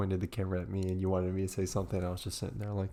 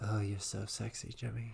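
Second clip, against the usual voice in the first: hushed, soft, sweet half-whispered murmur; 2 semitones higher, 6 dB quieter than usual. Retelling waiting in a cold parking lot with Deborah, imitating Deborah's sweet half-whisper. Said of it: "And Deborah whispers to me".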